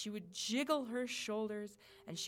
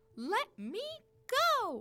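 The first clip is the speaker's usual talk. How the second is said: highest, cutest, tiny, raised cooing voice; 14 semitones higher, 6 dB louder than usual. Narrating a dream troll held by the ear by Nana; highest, cutest little voice. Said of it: "it cooed in the highest, cutest little voice".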